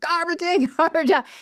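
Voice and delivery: mock high yell. Speaker demonstrates the phrase they yell at themselves in the car, yelling. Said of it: "I'm yelling".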